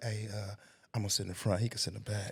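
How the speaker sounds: hushed, secretive half-whisper kept under the breath. Retelling how the other speaker once half-whispered to someone else: imitating someone half-whispering. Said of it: "And you whispered to Ron".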